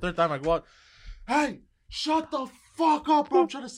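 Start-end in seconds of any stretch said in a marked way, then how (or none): 1.3-3.8 put-on shrill, very high, furious shouting. Retelling telling a loud neighbor off on the balcony: imitating himself yelling. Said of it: "on the balcony, yelling".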